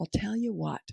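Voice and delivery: soft, calm, composed, in-control delivery. Showing how a leader talks without ever yelling, talking slow and low. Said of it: "You talk slow and you talk low".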